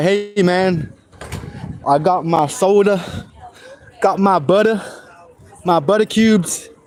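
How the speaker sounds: drawn-out, slow put-on American accent. Answering americans who plan to fake british accents: put-on american accent. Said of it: "should I come to America and be like".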